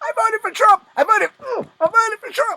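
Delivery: very high, very loud shrieking scream. Describing a video of a man being kicked, the speaker acts out his cries: imitating a man screaming. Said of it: "and he's screaming".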